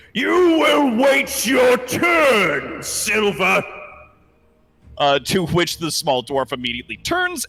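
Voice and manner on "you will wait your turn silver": very high, very slow roar, "turn" stretched. Voicing a king who points his axe at an intruder: bellowing. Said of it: "and bellows down the, the walkway at him".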